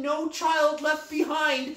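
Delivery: half-put-on, mild yelled rallying battle cry. Describing a film scene of a woman searching for a child, imitating someone yelling. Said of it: "this woman trying to find this child is yelling".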